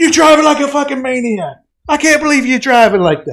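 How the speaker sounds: mock enraged sergeant voice, furious, high-pitched screaming. Recounting being pulled over, retelling the first sergeant screaming at them. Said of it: "He starts fucking screaming at me".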